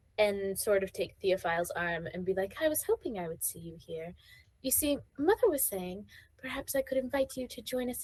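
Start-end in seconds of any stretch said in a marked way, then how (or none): 2.6-8.1 put-on young lady character voice. Voicing Lady Susan taking Theophile's arm at a gathering: voicing Lady Susan. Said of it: "Lady Susan is going to come up".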